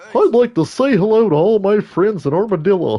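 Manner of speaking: high, loud, chirpy, friendly impression voice. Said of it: "Is that what Barney sounded like?".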